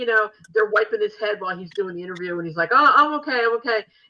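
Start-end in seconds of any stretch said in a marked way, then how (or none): 2.7-3.8 put-on British accent, raised, high pitch. Retelling what a wrestler said in an interview, imitating him in a British accent. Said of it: "with his beautiful British accent".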